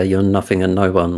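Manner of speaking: ordinary talk, nothing marked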